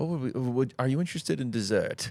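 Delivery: put-on British accent, pitched a bit up. Recounting a favourite movie scene, quoting a character in a UK accent. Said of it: "the guy is with the U K accent".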